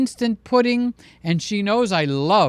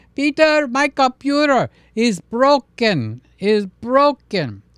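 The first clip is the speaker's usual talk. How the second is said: put-on full, thick Greek accent laid on, pitched up; 5 semitones higher, 4 dB louder than usual. Retelling a phone call from his father, in a full Greek accent. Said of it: "So we got the full Greek accent".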